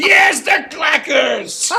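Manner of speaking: yelling, high and furious. Voicing a caller's message against trendy toys: Angry Walter voice. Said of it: "Here's Angry Walter".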